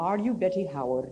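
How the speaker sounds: put-on female Scottish accent. Retelling what a visiting lady said at the door: Mom Cunningham's Scottish accent. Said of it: "in her wonderful Scottish accent".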